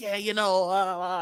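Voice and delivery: mock, slow, condescending, patronizing drawl. Retelling what a rival fan said to him: imitating a condescending tone. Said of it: "they kinda talk to you like".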